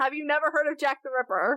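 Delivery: ordinary talk, nothing marked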